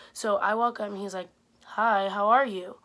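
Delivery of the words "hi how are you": mock zero-enthusiasm flat voice, louder, slower. Retelling a tired producer greeting her, imitating an unenthusiastic producer. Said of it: "his enthusiasm was at a zero".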